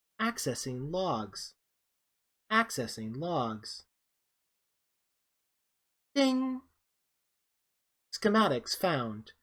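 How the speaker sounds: sing-song, swooping automated computer announcer voice. Voicing the ship's computer accessing logs: voicing Mother, ship computer. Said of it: "Mother's like".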